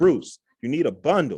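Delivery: yelling. Retelling a phone call from an accountability partner: imitating someone yelling.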